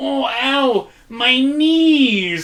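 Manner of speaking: put-on child's voice, very high, very slow, drawn-out whine. Retelling what a small child said in a store: imitating a whining five-year-old. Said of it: "five-year-old just go".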